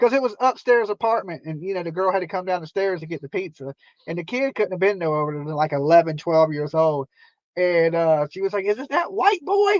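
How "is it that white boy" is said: mock very high hollered call. A pizza delivery driver retells a girl calling down from upstairs, retelling a holler.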